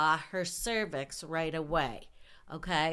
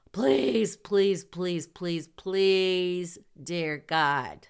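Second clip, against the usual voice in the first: mock near-tearful crying voice, louder; 6 dB louder than usual. Retelling begging the instructor not to flunk them, retelling near-tearful begging. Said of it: "I am basically crying".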